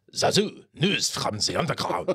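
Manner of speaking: very high-pitched, put-on German accent. Recalling the mole puppet's only line in Lion King, German accent. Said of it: "in a German accent".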